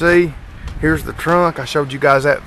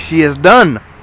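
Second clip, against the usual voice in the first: clumsy, bad fake French accent; 5 dB louder than usual. Showing off a finished car, joking: bad french accent. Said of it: "That's a bad French accent".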